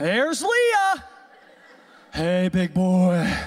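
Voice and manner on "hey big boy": woman's voice, dropped deep. Acting out Leah greeting Jacob in the morning: deep voice as Leah. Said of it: "She had a deep voice".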